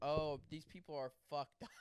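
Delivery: ordinary talk, nothing marked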